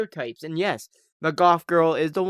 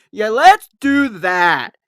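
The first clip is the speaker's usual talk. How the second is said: slow, drawn-out, sing-song, sarcastic, put-on robotic delivery; 4 semitones higher, 10 dB louder than usual. Imitating an actress's line in a movie: imitating robotic acting. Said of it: "It sounds very sarcastic".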